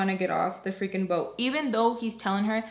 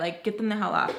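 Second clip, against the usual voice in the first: normal talking voice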